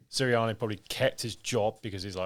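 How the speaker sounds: ordinary talk, nothing marked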